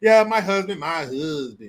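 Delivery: slow, drawn-out delivery of each word. Retelling a speech by Kamala Harris, imitating her: Kamala Harris impression. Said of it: "Why'd you say it like that".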